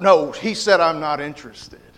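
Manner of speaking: mock annoyed, irritated snarling voice. Retelling how the lady answered when offered a gospel tract, retelling a snarl. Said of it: "the lady kind of snarled".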